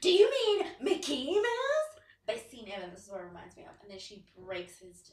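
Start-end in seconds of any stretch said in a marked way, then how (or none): 0.0-2.0 play-acted very high, very loud, furious, booming outburst. Retelling a New Girl scene: imitating Schmidt angry. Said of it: "Schmidt gets so angry".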